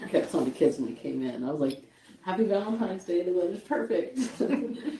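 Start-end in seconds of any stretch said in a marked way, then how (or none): 2.2-4.2 higher, sarcastic, cheery tone. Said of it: "They picked up on the sarcasm".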